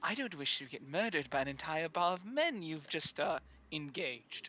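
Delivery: whispering back. A character taking a woman's arm off his shoulders in a bar, whispering back. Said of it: "he's going to whisper back".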